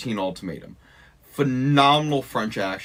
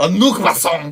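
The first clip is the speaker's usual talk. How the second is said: aggressive delivery, much higher pitch and much louder; 6 semitones higher, 9 dB louder than usual. Told to say the phrase with aggression, the speaker tries it: said with aggression. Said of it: "You have to say it with some sort of aggression".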